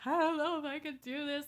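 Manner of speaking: put-on, very loud, high-pitched blubbering through tears. Retelling crying at a doctor's appointment: imitating own ugly crying. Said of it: "I'm crying my eyes out".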